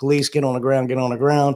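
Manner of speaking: normal talking voice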